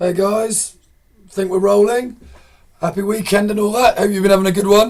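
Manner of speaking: very husky, hoarse voice. Greeting listeners at the start of a recording, in a husky voice. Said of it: "I'm sounding very husky".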